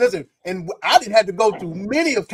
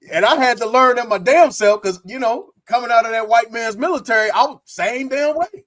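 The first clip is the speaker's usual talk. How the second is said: ordinary talk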